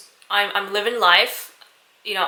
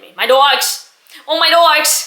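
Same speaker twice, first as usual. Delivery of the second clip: fake New York accent, loud; 7 semitones higher, 7 dB louder than usual. Listing their accomplishments, the speaker bursts into a put-on New York accent. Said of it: "My New York accent".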